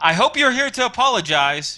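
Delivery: high-pitched shout. The narrator voices Mia, who won't open the door, yelling through it. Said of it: "she yells through it".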